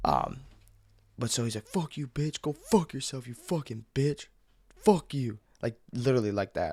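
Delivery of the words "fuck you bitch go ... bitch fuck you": mild, somewhat higher-pitched mock yelling. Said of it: "a lot yelling, screaming".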